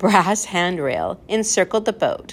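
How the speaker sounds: plain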